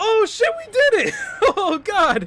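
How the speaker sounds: shrill outburst, voice cracking, very high, very loud. Player reacting right after finally beating him in the game, voice cracking. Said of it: "My voice cracked".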